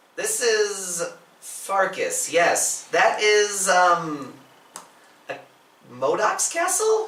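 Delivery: slightly squeaky, high character voice with bouncing pitch. Voicing a new character who answers a call; squeaky Farkas voice. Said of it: "a little squeakier, a little higher pitched".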